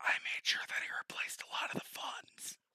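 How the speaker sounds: close-in, hushed, breathy whisper. A game narrator voicing a character who gets close to the player, whispering. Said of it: "he whispers".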